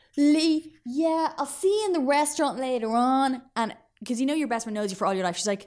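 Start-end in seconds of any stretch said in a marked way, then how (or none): 0.2-3.4 high, leisurely, casual chatty voice. Retelling pretending to talk on a new mobile phone: imitating own past fake phone call. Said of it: "And I was just like".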